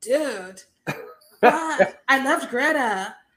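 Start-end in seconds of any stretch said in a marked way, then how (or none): 0.0-2.0 laid-back surfer-dude drawl, very slow. Imitating a movie character who sounds like a surfer dude: imitating a surfer dude voice. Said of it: "he sounds like a surfer dude".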